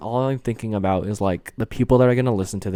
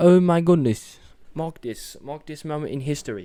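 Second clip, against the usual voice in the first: sudden slide into a British accent; 6 semitones higher than usual. Catching themselves on their first podcast tangent, in a British accent. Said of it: "I just did a British accent".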